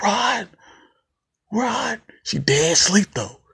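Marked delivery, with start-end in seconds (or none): 0.0-2.0 acted, very high-pitched screaming call. Retelling a horror movie scene where a woman screams for rod: imitating someone screaming. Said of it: "She's screaming".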